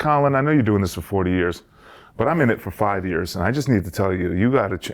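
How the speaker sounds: plain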